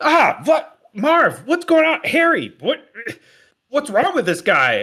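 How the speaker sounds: very high, very loud, shrill panicking. A man in a game scene panics and is about to summon guards, freaking out. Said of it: "he starts freaking out, and it's like".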